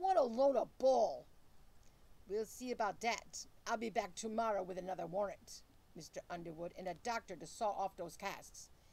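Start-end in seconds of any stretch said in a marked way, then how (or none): 0.0-1.3 furious, very loud, high-pitched shout. Dad reacts to Mr. Underwood, angry. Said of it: "Dad angrily clacked his plaster paws together".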